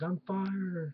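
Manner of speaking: heavy mocking sarcasm. Retelling a fired man walking out of the ring, with put-on sarcasm. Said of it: "Just sarcastically".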